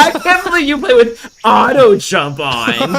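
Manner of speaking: put-on snooty, stuck-up tone, high and loud. Repeating the other player's remark about auto jump: imitating a snobbish tone. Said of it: "You said that so snobbish".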